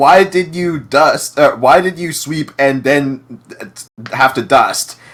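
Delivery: put-on slow, drawn-out scolding yell. Retelling a mom yelling at the dad over the cleaning: imitating a mom yelling. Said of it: "is yelling at the dad".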